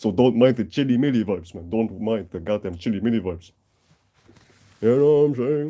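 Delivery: ordinary delivery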